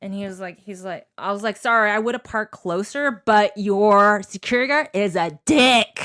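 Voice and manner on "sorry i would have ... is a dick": loud, raised voice, said for all to hear. Retelling what you said to the guy who ordered the food, retelling saying it really loud. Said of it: "I said it really loud".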